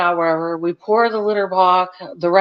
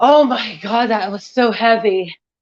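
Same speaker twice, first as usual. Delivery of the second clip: panting, winded, still catching breath; 3 semitones higher than usual. Speaker just finished a heavy workout, telling babe to hang on, out of breath. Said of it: "let me catch my breath".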